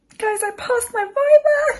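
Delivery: very high voice right on the edge of tears. Telling viewers about passing the viva: near tears, emotional. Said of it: "I'm gonna cry again".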